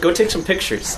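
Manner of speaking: ordinary talk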